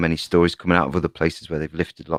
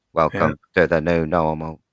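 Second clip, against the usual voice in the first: mechanical, synthesized robotic computer voice. Telling a co-speaker a phrase must be said a certain way, computer voice. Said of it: "You have to say it in a computer voice".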